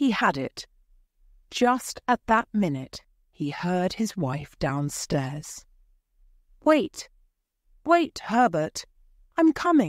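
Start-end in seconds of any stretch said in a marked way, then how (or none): 6.6-9.9 high, crying out. A wife downstairs at the front door calls out; crying out. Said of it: "she cried".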